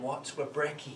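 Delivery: ordinary delivery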